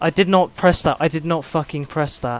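seething, furious, loud, rapid, livid outburst. Player reacting to an input he says he never pressed, livid. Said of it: "I'm so livid!".

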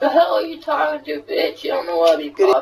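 very high, hoarse, raspy smoker's voice. Trash-talking an opponent in an online game: hoarse smoker's voice. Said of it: "what the hell's wrong with your voice?".

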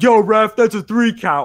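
high, loud heckling yell.

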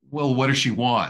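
biting sarcasm. Retelling a man's reply to a message from his dead mother, mock-sarcastic, a little aggressive. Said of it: "kind of sarcastic and a little aggressive".

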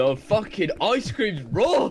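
put-on very high, squeaky, childlike furious ranting tirade. Playing a game, the speaker launches into a Gordon Ramsay impression. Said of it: "it sounded like a child, like Gordon Ramsay or something".

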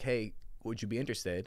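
plain

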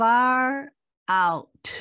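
resonant, booming voice with "far" drawn out. Telling a story, voicing a voice from the parted skies: booming voice. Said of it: "a booming voice said".

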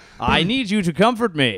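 loud, high put-on robot voice. Acting out a robot guest arguing with the clerk: put-on robot voice. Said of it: "Robot stays at robot hotel".

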